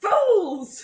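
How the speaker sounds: very loud, shrill, high-pitched full yell. In a tabletop game, a lord yells at those outside the door, Medric's voice, yelling loudly. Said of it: "as loud as I possibly can, try and imitate Medric's voice".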